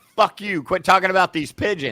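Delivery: fed-up, angry retort. Voicing another man in the picture, imitating an angry man. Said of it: "that guy's pissed".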